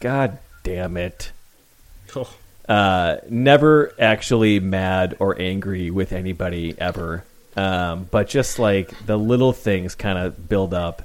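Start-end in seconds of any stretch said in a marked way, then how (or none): 0.0-1.3 muttered under breath, quieter and slower. Describing a personal habit when little things build up, muttered under breath. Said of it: "do the under my breath".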